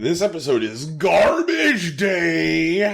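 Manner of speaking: goofy, affected high voice with day drawn out. Show host announcing the episode's title, in a put-on voice. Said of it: "I don't like that voice".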